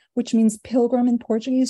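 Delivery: plain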